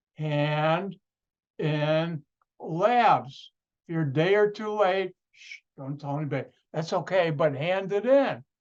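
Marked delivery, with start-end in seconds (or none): 0.2-3.5 drawn-out, deliberate, exaggerated slow-motion delivery. A teacher ending class repeats a reminder to students, in slow-motion speech. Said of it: "I'll say it in slow motion".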